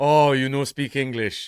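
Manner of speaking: put-on Indian accent. Retelling what a man said to him, imitating an Indian accent. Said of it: "this Indian man saying to me".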